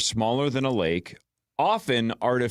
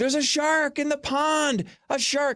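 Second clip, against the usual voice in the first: very high, shrieking, screaming voice. Retelling a scene in Jaws where people scream: imitating people screaming. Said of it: "So when they're screaming".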